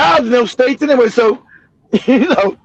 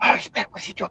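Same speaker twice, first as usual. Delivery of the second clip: very hushed, suspicious whisper under the breath. Retelling shoppers who followed through a grocery store: imitating someone whispering. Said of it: "You hear him whispering".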